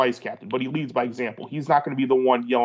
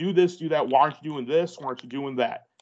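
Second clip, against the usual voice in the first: play-acted pushy, confrontational, in-your-face delivery. Imagining a strong outfield captain up in players' faces: imitating a captain in players' faces. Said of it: "he's up in their face".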